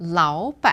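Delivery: lao said with rising second tone, ban with dipping third tone. Mandarin lesson on two third tones together: rising lao, dipping ban. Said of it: "the first word becomes second tone and the second word stays the third tone".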